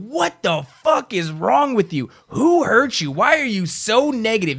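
mock animated, worked-up, high, swooping angry shout. Recounting confronting a negative person: retelling an angry shout. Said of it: "I fucking get animated and I start shouting".

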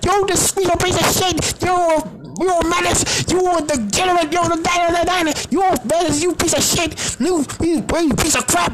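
very high-pitched, shrill yelled tirade. Retelling a good cop, bad cop interrogation scene: imitating Munch yelling. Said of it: "Munch was yelling at people saying".

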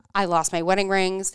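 ordinary delivery

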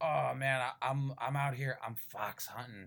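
put-on stumbling drunk man's voice, loud, slow and rambling. Retelling a comic scene, voicing a man who seems drunk: imitating a drunk man. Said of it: "he seems like he's drunk and he's like".

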